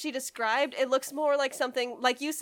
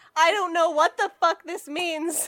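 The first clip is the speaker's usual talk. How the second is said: ordinary talk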